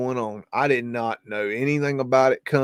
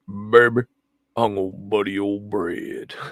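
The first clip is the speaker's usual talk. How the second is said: put-on deep joking voice, lower; 4 semitones lower than usual. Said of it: "I used to do it in a much deeper voice".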